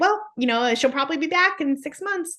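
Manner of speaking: high, play-acted, casual, offhand nonchalant tone. Retelling what a caller said about the child returning: imitating a nonchalant remark. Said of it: "she just said it so nonchalantly".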